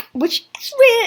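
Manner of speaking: voice breaking, cracking up very high. Explaining how a game helper targets on its own: voice cracking. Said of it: "I just had a voice crack".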